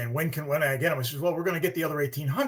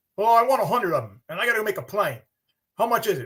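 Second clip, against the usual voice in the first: put-on Australian accent, pitched higher; 6 semitones higher, 4 dB louder than usual. Retelling what a buyer said to the speaker; imitating John, Australian accent. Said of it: "I'll try to do my best Australian".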